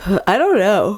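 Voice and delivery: talking through a yawn. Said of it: "Sorry, I'm yawning".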